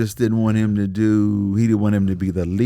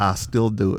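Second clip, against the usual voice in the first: ordinary delivery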